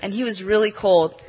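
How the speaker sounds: plain reading voice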